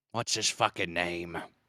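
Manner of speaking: fake Italian man voice. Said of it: "I'm talking like my Italian guy again".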